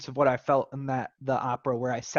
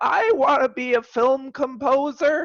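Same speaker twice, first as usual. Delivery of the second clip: jittery, blurted, very high nervous yell; 12 semitones higher, 7 dB louder than usual. Speaker recalling what they said to their crush, retelling a nervous yell. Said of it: "in a nervous state, I yelled out".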